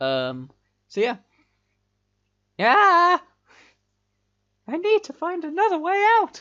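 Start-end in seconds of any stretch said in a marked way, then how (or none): 2.6-6.4 very high, loud, put-on female heroine-style voice. Streamer voicing the female character in the game he is playing: put-on female character voice. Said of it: "I don't know if I'm gonna do that voice".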